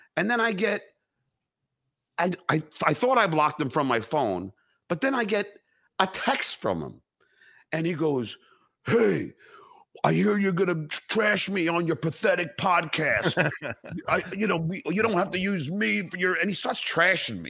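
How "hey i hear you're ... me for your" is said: spot-on character voice, stuttering and stumbling. Retelling a text from Steve Grillo in a Steve Grillo impression. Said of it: "that was a killer impression, [name]".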